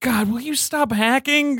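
very high, harried, frazzled griping tone. Describing an actor's film roles, imitating a harried FBI middle manager. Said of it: "a harried middle manager at the F B I".

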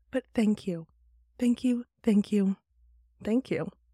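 voice catching, a little teary and choked up. Speaker thanks the community for doing this together, tearing up a little. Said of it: "I'm tearing up a little bit".

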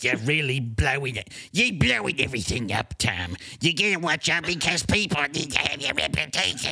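thoroughly fed-up, exasperated, frustrated scolding voice. Imitating David Marvel scolding Tom: imitating David Marvel getting frustrated. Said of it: "His voice gets like that whenever he gets really frustrated".

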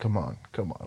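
seductive, sultry delivery. Imitating how he says a line: imitating a sultry voice. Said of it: "he just says it, like, so sultry".

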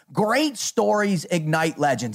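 ordinary delivery

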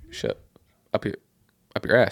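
timid, shy, sheepish, bashful delivery. Retelling how Pat answered the question: imitating a shy answer. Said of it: "kinda answered the question si-, shyly".

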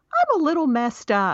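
wee, tiny, small, high voice. Retelling what he said after yelling out, in his retold little voice. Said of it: "he has this little voice and he goes".

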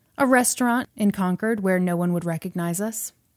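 normal talking voice

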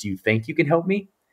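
very soft, hushed half-whisper. Retelling how a visitor asked for help: imitating a soft half-whisper. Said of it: "then he whispered, almost, like, a very softly".

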